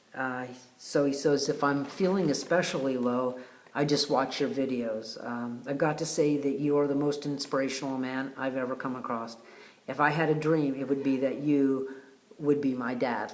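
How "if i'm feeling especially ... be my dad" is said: normal talking voice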